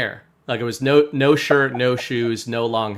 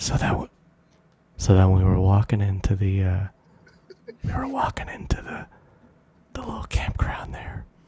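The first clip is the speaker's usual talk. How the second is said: joking whisper close to the microphone; 4 semitones lower than usual. Telling a campground story up close to the mic after being asked: joking whisper close to mic. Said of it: "Yes, whisper close".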